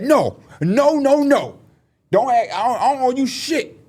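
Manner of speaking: very high, slow, drawn-out comedian voice. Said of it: "You know how Tracy Morgan talk?".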